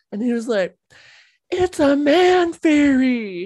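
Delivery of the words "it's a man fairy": very slow, self-righteous, raised, "fairy" stretched out. Retelling a son answering his dad's teasing: imitating Skylar, defensive and self-righteous. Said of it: "very defensive and self-righteous".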